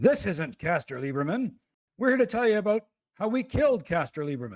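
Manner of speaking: high-pitched, called-out delivery. In character during a game, a player cuts in: shouting out. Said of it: "And I shout out".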